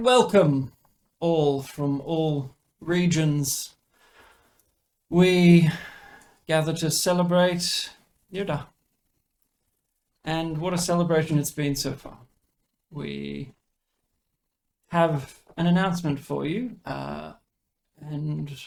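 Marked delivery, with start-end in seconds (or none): 0.0-16.8 effortless, loud voice that rings out and carries. Voicing a figure announcing to a gathered, quiet crowd: loud, carrying voice. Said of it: "in a loud sort of voice".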